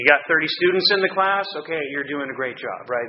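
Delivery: ordinary talk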